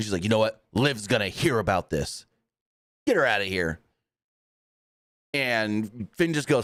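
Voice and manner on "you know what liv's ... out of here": angry, huffy, irritated outburst. Retelling a scene where she is pissed: imitating someone angry. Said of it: "Raquel's just pissed".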